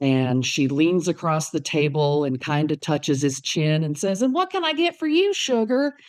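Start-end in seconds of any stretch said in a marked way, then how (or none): 4.2-5.9 put-on broad, strong Southern accent, very high-pitched. Retelling a woman leaning across the table to a young man, in a strong Southern accent. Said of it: "she had a pretty strong Southern accent".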